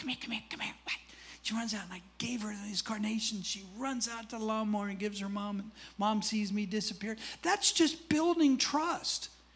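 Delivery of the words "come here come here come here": soft, hushed whisper. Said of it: "I'm whispering for her".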